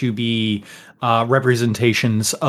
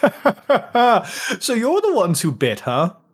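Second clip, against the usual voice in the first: put-on jovial old man voice, high and bouncy, laughing through words; 11 semitones higher than usual. Voicing Yajaj as he greets the group, with a jovial old-man laugh. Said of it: "greets you with kind of like a jovial, like old man laugh".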